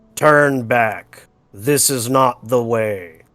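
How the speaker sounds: very deep, loud, many voices speaking as one. Voicing what everyone hears in unison while climbing the wall, in a very deep voice. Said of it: "in a very deep voice".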